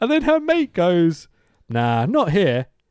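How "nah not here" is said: put-on Northern accent. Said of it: "Why did you say that in an Northern accent?".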